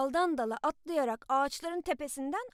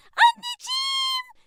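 very high, shrieking, frightened scream; 7 dB louder than usual. Narrator reading a character screaming as a huge man bursts from the bushes. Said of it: "diye çığlık attı".

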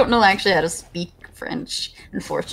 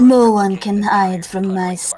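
raised voice with a French accent; 5 dB louder than usual. Speaker showing off a Widowmaker impression the group asked for, Widowmaker impression. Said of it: "I have a really good Widow impression".

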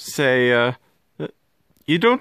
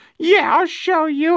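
squeaky, high voice. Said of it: "that squeaky voice".

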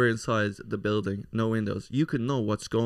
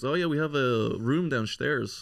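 put-on Dutch accent in English; 3 semitones higher than usual. Jack retelling what a dutch man said about locking their bikes, dutch accent. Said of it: "I know you're doing the Dutch accent".

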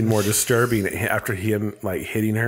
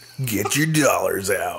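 creepy announcer-style dj voice. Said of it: "your creepy D J voice".

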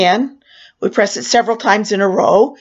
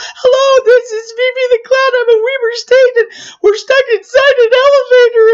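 mock frantic, very high-pitched hysterical panic; 4 dB louder than usual. Retelling her own 911 call while stuck in an elevator, acting out hysterical panic. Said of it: "I know I sound like I'm a hysterical nuthead".

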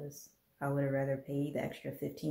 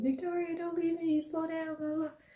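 mock, very high, panicked, frantic shriek. Retelling a scared man in a haunted house: imitating someone screaming. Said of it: "he kept screaming her name, like".

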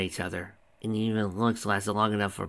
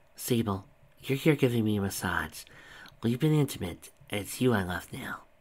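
ordinary delivery

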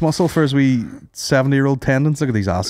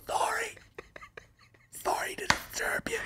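breathy, very quiet, nearly silent whisper; 16 dB quieter than usual. Acting out a woman sneaking past cameras: imitating someone whispering. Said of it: "And whisper".

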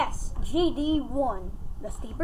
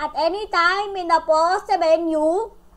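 loud, put-on Indian accent; 4 semitones higher, 7 dB louder than usual. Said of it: "Why do I sound like an Indian scammer?".

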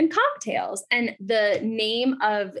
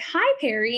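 quick, brief "hello". Retelling meeting a man at a bar, imitating his high-pitched voice. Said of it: "his voice was so high pitched".

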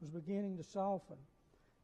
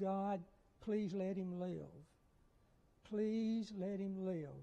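put-on pleading, begging tone. Retelling a night of praying in a hotel room: retelling a begging prayer. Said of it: "It was a night of just begging".

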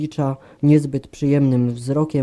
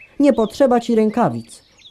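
curt, harsh, brusque, rough-edged, pitched up; 8 semitones higher, 3 dB louder than usual. A woman answers a man who offers to fetch gloves; harsh. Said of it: "odparła szorstko".

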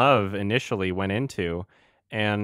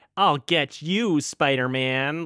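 lame, high, drawn-out movie-villain voice; 6 semitones higher than usual. Mocking a disliked film villain line: Topher Grace's Venom voice. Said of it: "Topher Grace's voice as Venom".

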